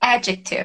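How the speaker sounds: adjective said with first syllable "ad-" stressed. Teaching the English word versus Portuguese adjetivo, stress on first syllable of adjective. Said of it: "ao invés do- da sílaba mais forte ser no final, ela é no começo".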